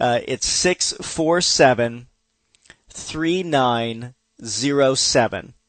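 a little slowed down. A host repeats the phone number for listeners, a little slower. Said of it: "let me say the number a little bit slower".

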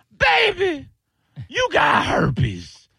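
put-on Chinese accent, very high and swooping. Acting out what a prostitute said to him, in a put-on chinese accent. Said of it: "And you're like that accent".

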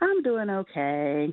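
low-spirited, downcast tone. A caller on the show answers the host's greeting, sounding down. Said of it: "You sound down".

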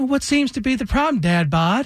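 put-on sweet, high-pitched Southern woman's accent. Retelling what a passing driver called out: imitating a sweet southern voice. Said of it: "I hear this sweet Southern voice".

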